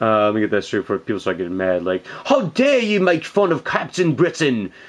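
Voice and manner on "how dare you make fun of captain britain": terrible fake English accent, pitched up. Defending a collectible figure people make fun of: bad english accent. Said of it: "That's my that's my English accent".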